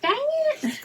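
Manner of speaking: very high-pitched, squeaky woman's voice. Acting out how the woman will react to the sale, imitating her high voice. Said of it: "She's got a high voice".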